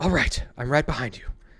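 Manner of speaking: fed-up, long-suffering, exasperated tone. Player voicing Ying, answering a companion who wants to leave, Ying's exasperated voice. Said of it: "He says in his exasperated voice".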